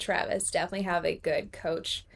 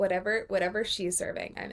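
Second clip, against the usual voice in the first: ordinary delivery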